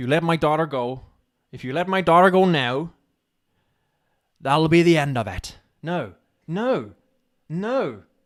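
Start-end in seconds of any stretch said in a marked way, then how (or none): 0.0-5.6 attempted American accent, much louder. Practising a line, in a basic American accent attempt. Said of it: "basic American accent".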